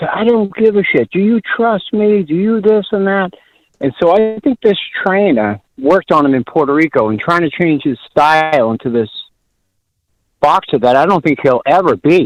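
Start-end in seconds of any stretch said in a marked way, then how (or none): 0.0-3.3 high-pitched, angry, loud yelling. Recounting a boxing match, quoting the trainer's answer to his fighter: retelling a trainer's yell. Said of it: "And he yells".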